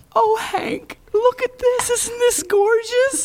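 very high, gushing, excited delivery. Asked what she sounds like, speaker imitates Judy showing Hank antiques: Judy impression. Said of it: "What does she sound like?".

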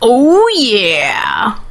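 big, swooping, animated cartoon mascot voice. Answering a request for the best Kool-Aid Man impression: Kool-Aid Man impression. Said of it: "your best impression of the Kool-Aid Man".

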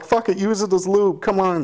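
high, mock eager cooing voice.

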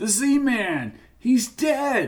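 quivering voice. Jackie calls out as he moves up the slope, quivering voice. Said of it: "Jackie's voice quivered".

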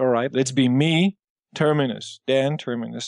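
plain

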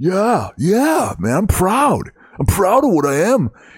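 forceful, aggressive dumb-guy voice. Speaker demonstrates their go-to voice for a dumb right-wing guy. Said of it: "my go-to dumb shit right-wing voice".

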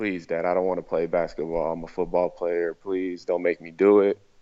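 put-on begging, pleading voice. Retelling own past words to dad: imitating own past begging. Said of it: "I begged my dad".

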